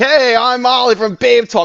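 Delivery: cheesy morning radio DJ. Retelling her own festival announcement to the audience: morning radio DJ voice. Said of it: "I sounded like a morning D J host".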